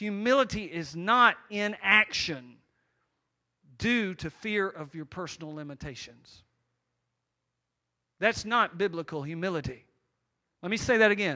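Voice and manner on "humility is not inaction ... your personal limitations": slow, measured, deliberate, weighed word by word. Explaining biblical humility, stating what it is not, slow and deliberate. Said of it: "I'm going to say this slowly".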